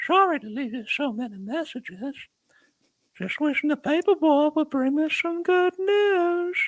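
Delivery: very high, slow, creepy yet funny voice. Retelling prank calls made to people: put-on creepy comic voice. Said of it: "like so creepy, so funny at the same time voice".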